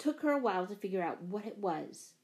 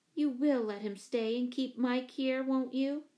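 usual speaking voice

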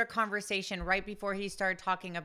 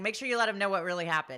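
usual speaking voice

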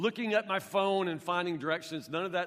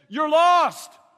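shrill, booming, very loud high-pitched holler; 10 semitones higher, 14 dB louder than usual. Retelling how a driver shouted out his car window: imitating someone shouting. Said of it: "he just shouts out the window at me".

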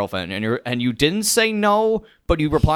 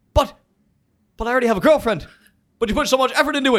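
shrill, very high-pitched, blunt screaming; 11 semitones higher than usual. Impersonating a character from the show who talks in screams. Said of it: "that's how Naya talks".

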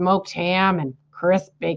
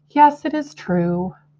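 slow, pitched-up, on a long sigh; 6 semitones higher than usual. Narrator reading a character's reply to the rat's question, sighing. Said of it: "sighed Charlotte".

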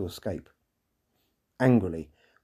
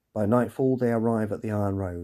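usual speaking voice

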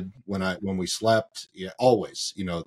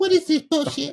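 very high, nasty pet-dog voice. Describing how a dog acts at home, the speaker does Bonnie's dog voice. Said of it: "that's her voice".

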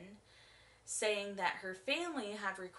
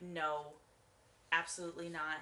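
usual speaking voice

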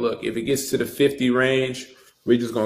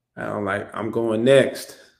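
usual speaking voice

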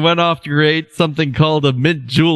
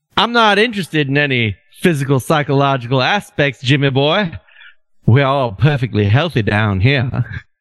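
put-on drawl with Southern accent. Reading McCoy's reply to Kirk from the episode, McCoy in Southern drawl. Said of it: "say McCoy's line in your best Southern drawl".

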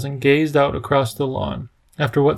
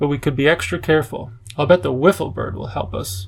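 plain reading voice

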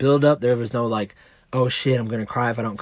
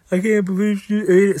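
put-on high, loud bawling through sobs; 9 semitones higher, 5 dB louder than usual. Retelling an emotional moment after a child ate: retelling a bawling line. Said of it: "and I'm bawling".

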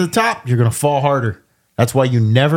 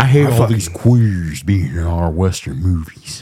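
dropped way down, very deep, low and rumbling; 7 semitones lower than usual. Joking with a friend and doing a Sam Elliott impression. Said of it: "my best, uh, Sam Elliott impression".

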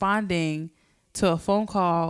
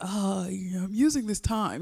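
mocking mimicry of another voice; 2 semitones higher, 3 dB quieter than usual. Teasing the other speaker about a Leo answer: mocking imitation of the other speaker. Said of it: "You're such a".

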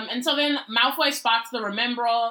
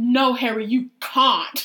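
put-on, overacted dramatic delivery, louder; 4 dB louder than usual. Retelling a scene, imitating Emma Watson's super exaggerated acting. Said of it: "super exaggerated acting".

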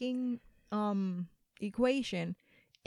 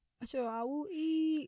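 put-on childish, high-pitched, slow little-kid voice; 5 semitones higher, 4 dB quieter than usual. Imitating the reply from babe about what to eat: imitating someone talking like a little kid. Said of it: "He's talking like, like a freaking little kid".

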